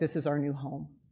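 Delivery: plain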